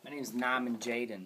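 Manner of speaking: loud, terrible, fake Boston accent. Playing a video game, mimicking how a game character talks: bad fake boston accent. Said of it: "He tries to use a Boston accent. It's just terrible".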